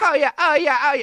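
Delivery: high, showy sexual moans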